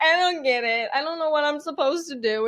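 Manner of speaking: upset, tearful, confused, high crying voice. Recalling messing up the same part with Dad, imitating their past self crying. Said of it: "I'm crying and I'm like".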